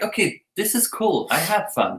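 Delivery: ordinary talk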